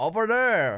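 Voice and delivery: trying on an American accent. Repeating a pronunciation another speaker just taught, attempted American accent. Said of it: "Oh my god, I sound American".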